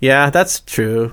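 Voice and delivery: flat deadpan delivery. Recalling being asked a question about game shows, retold deadpan reply. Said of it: "I was so deadpan".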